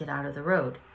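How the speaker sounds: ordinary talk, nothing marked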